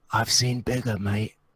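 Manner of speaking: quiet whispering voice. Playing a character on a giant's shoulders, leaning over to taunt him: whispering into an ear. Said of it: "lean over and whisper into his ear".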